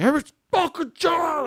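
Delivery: very high-pitched screeched, screaming rant. Retelling breaking up a fist fight: imitating own screaming. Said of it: "I started screaming".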